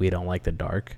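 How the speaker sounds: ordinary talk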